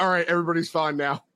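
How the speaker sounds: usual speaking voice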